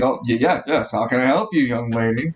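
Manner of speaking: put-on eager, obliging older man, stumbling at the start. Voicing an older character who greets a player: enthusiastic older man. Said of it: "He looks at you enthusiastically".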